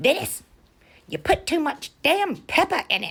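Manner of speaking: very high, very loud, shrill scolding. Speaker retelling grandmother scolding grandfather over the dumplings, imitating Daisy going off. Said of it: "she'd go off".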